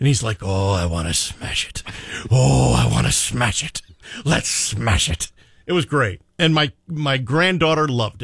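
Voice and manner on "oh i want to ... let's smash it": deep, slow, weighty tone. Retelling a movie scene about rams eyeing a pickup truck: imitating Roy Kent voice. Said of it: "he's using the Roy Kent voice".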